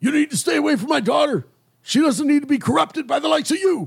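deliberately awful put-on voice, very high-pitched. Voicing a man telling a player to stay away from his daughter: painful put-on voice for the angry visitor. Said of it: "I don't know how to do his voice, so I'm just gonna do this".

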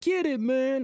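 put-on shrill, very high, jeering sarcastic yell. Retelling what a guy yelled while honking at him, retelling a sarcastic yell. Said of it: "he was being sarcastic, totally sarcastic".

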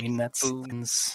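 mimicked muttering under breath. Describing a girl behind her textbook watching a video, the speaker imitates her murmuring under her breath. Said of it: "she's just murmuring that like under her breath".

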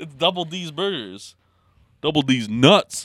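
every word stretched way out, very slow. Joking about a made-up burger place name, deep voice like Shaq. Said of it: "you sounded like Shaq. Like, your deep voice when you said it".

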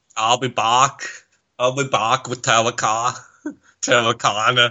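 put-on Boston-accented movie star voice. Joking with a co-host about accents: Boston Arnold Schwarzenegger voice. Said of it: "Boston Arnold needs to be a recurring character".

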